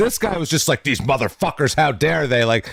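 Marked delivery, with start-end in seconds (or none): 0.8-2.4 put-on raging voice, higher. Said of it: "don't show rage now".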